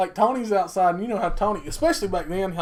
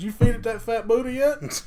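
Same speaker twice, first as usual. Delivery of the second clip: acted-out yell, shouting; 2 semitones higher than usual. Telling a story about a man at a game, retelling own yell. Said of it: "I yell".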